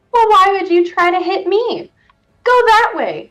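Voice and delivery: laughing voice. A game master voices a laughing voice in a player's head, laughing voice. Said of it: "you hear this laughing voice in your head again say".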